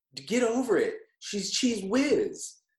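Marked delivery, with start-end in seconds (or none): 1.5-2.6 imitated odd stress on a word. Quoting the blonde villain's line, imitating weird emphasis on Cheese Whiz. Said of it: "she really lands the emphasis on a weird syllable".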